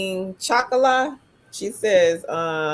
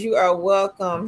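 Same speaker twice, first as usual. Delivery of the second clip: normal talking voice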